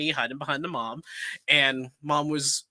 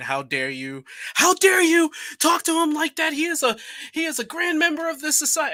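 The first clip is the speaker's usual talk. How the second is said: put-on shrill, very high, swooping scream; 13 semitones higher, 5 dB louder than usual. Retelling how the man behind came out screaming at the woman: imitating a man screaming. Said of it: "he came out screaming at the woman saying".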